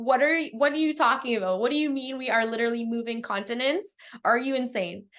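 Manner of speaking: fast, panicked rushed speech. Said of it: "panicked 'cause he's like".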